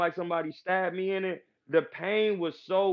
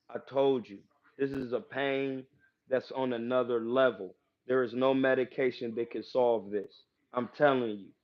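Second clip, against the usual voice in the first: put-on utterly calm, composed, calmest possible voice; 6 semitones lower than usual. Retelling what he said to his surgeon during eye surgery: imitating his own calmest voice. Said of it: "I told him in the calmest voice I could".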